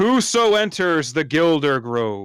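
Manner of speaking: loud, gruff, deliberate, drawn-out delivery. Recapping how the group was questioned at a tree last time: loud gruff voice. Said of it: "in a very loud and gruff voice".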